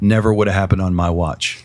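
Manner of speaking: whispered voice. Retelling what he whispered in the speaker's ear during a hug, retelling a whisper. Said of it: "he whispers in my ear".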